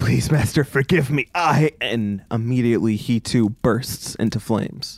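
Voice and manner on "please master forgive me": fast, frantic, panicked, spat-out pleading. A swordsperson kneeling before Suzette apologizes to their master, panicked pleading apology. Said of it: "begins to spit out apologies in panicked tones".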